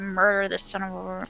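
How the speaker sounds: hushed half-whisper muttered under the breath. A player voting for an option adds a line, half-whispered under breath. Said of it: "I'm gonna whisper under my breath".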